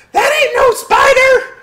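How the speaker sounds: very high, very loud, shrill, squeaky tiny voices. Through a broken piece of door, creatures shout at the party in little squeaky voices. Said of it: "little squeaky voices in Draconic going".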